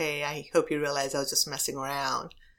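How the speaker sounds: sheepish, apologetic voice. Retelling how an officer apologized after her presentation: imitating a sheepish apology. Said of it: "he's really sheepish".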